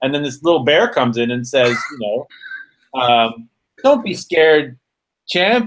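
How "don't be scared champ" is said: acted, sweet-but-mean tone, pitched up. Retelling the little bear's reply to a nervous patient: imitating mean niceness. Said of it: "kind of mean and nice, but mean".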